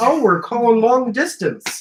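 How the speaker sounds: put-on old man voice. Teasing the other speaker by acting out an old man: put-on old man voice. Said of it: "You're like an old man trying to".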